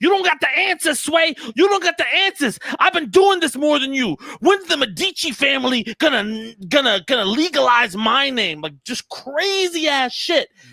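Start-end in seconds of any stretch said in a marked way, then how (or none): 0.0-8.6 mock all-out ranting scream at top of lungs. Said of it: "he's screaming at the top of his lungs".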